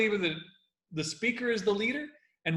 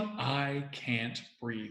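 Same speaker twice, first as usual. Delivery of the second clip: hushed, very quiet, halting delivery broken by pauses; 7 semitones lower, 10 dB quieter than usual. Demonstrating how to deliver someone's last words with impact; with pauses. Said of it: "that the pausing".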